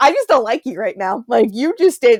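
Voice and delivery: put-on angry tone. Retelling waking from a dream and talking to the husband: imitating being angry. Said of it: "angry at him".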